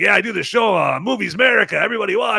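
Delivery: bad Cuban gangster accent. Recalling an event as Cocaine Bear, the speaker retells what was said: terrible Tony Montana impression. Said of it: "but I was talking like that".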